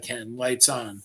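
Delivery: ordinary delivery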